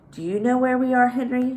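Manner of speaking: gentle, kindly, voice lifted. Narrator reads a character leaning close to a pteranodon, asking softly. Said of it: "she asked softly".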